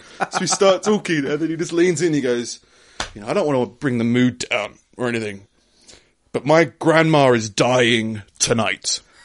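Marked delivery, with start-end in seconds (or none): 3.2-9.0 put-on voice of a drunk man. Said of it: "He was wasted".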